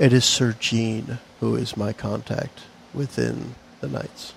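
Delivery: almost half-whispered, hushed and very clear. Voicing a chancellor revealing her contact to a player: almost a half-whisper. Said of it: "very clearly, but almost in a whisper".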